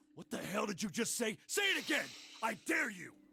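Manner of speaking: furious, high, shouted delivery.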